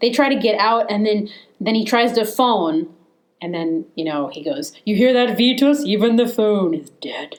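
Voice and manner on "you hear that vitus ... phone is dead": put-on rich voice with lisp. Retelling a horror film scene where the phone is dead: rich lisping Karloff voice. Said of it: "rich voice with a lisp".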